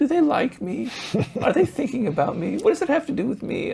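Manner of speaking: whining, very high-pitched. Demonstrating a self-absorbed listener's inner thoughts, in a whiny voice. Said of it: "I'm sorry using that voice".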